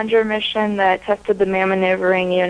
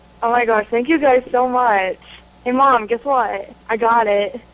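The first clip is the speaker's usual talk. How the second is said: overwhelmed, grateful voice close to crying; 4 semitones higher than usual. Just told they get to go to space camp, thanking them: overwhelmed, near tears. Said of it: "I think I want to cry".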